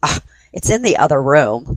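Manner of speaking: really snooty, superior, stuck-up voice. Retelling a voice heard from the Phasma box: imitating a really snooty voice. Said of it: "you hear this really snooty voice going".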